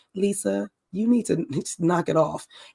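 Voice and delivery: steady, even, unraised voice. Retelling how Monica spoke to Lisa: Monica's voice. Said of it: "Monica was talking to her in this voice".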